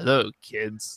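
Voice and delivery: dark, menacing delivery in a low tone. Retelling a scene where Harrison Wells greets touring school kids: Harrison Wells menacing dark tone. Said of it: "menacing or, like, this dark tone".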